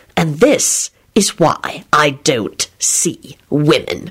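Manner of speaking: hissed, hissing voice. Narrator reads Lupin's line, turning on Quentin; hissed. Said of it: "he hissed at him".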